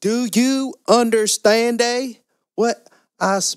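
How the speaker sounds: very high, slow, mocking put-on Spanish accent. Mocking how some people talk to non-English speakers: imitating slow speech with fake Spanish accent. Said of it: "say it slowly or even add, like, a Spanish accent".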